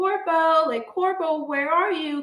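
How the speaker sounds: high, long, drawn-out stretched scream. Retelling a woman searching a huge store for corpo, imitating her screaming. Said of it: "she's screaming".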